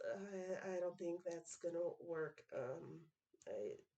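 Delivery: barely audible, under-the-breath, stumbling mutter. Voicing a character replying to the shadow in his coat: muttering in character.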